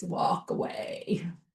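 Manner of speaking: low, deep, hushed whispered voice. Retelling words heard telepathically in the car: deep voice. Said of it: "It was this deep voice".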